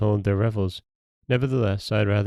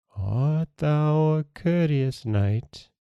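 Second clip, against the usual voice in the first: high, slow, hollow, empty ghost voice; 6 semitones higher than usual. Reading a tale, a grey ghost asks the prince, in a hollow voice. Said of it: "she asked in a hollow voice".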